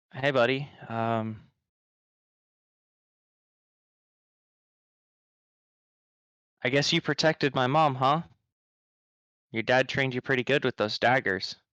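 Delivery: encouraging, voice catching and breaking slightly. Playing a character encouraging a young boy after tousling his hair, voice catching. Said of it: "Kind of Creorin's voice catching".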